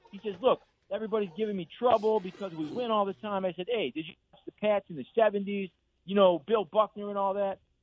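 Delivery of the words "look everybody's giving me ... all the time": clumsy, rough attempt at a Boston accent. Retelling a man's reply in a chat about sports teams, in a bad boston accent. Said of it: "I know that's a bad accent".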